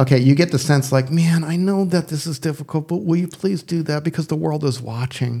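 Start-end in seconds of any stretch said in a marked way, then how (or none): 1.1-5.4 pleading, asking nicely, pitched-up voice. Imitating Paul pleading with the readers: imitating Paul pleading. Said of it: "I should have let you read that in that voice".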